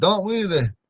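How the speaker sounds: pitch climbs up on "there". Showing a learner how to say the word: rising pitch. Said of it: "It's gonna go up".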